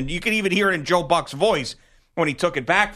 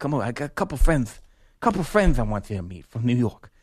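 heavily lisped s sounds throughout. Retelling a press dining story, imitating Jay Horwitz's lisp. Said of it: "when I do his impersonation".

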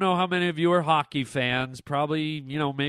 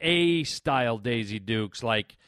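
usual speaking voice

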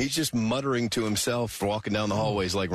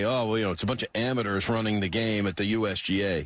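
usual speaking voice

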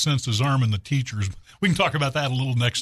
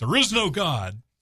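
acted-out yell, called out like a retort; 4 semitones higher than usual. Telling a joke, the speaker voices the atheist neighbor answering the old lady: acting out a yell. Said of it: "the atheist next door yells back".

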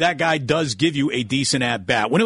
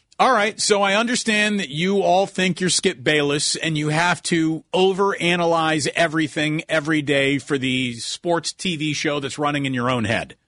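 ordinary talk

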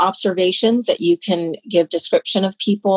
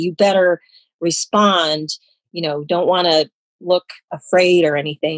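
ordinary delivery

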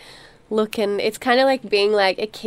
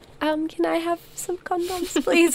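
mock schoolgirlish manner, pitched higher; 9 semitones higher, 4 dB quieter than usual. Retelling asking for free condoms at school: imitating a schoolgirly manner. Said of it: "the sort of schoolgirly".

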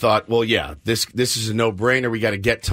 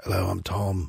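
soft, hushed, murmured, voiced stage whisper; 3 semitones lower, 8 dB quieter than usual. Retelling how the guest began his video: imitating tom half-whispering. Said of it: "and he's whispering".

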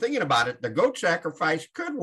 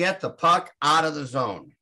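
ordinary talk, nothing marked

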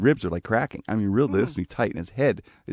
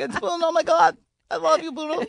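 put-on starstruck child voice, higher-pitched. Retelling the phone call, imitating Mike Tyson gushing like a twelve-year-old. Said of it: "you turned into, like, a twelve-year-old".

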